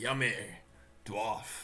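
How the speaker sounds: put-on growling monster voice with a Scottish accent. As game master, voice the creature spotting the dwarf, in a Scottish accent. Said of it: "You got the Scottish accent with how you say dwarf".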